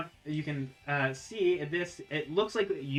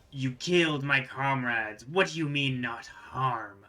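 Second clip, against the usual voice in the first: rumbling, draconic dragon voice; 2 semitones lower than usual. Narrator voices a speaker answering the party in Draconic, with a rumbling voice. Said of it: "you hear this like rumbling voice".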